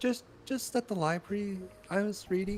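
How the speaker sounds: very quiet, anxious, shy, halting, barely there. Reading a shy character's answer about the library: super shy, socially anxious voice. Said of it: "you should always sound super shy and socially anxious, barely talking".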